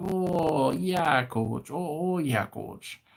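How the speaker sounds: slow, drawn-out, put-on North Dakota accent. Acting out how they'd answer a coach, in a put-on North Dakota accent. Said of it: "at least it's not North Dakota, because then they'd be like".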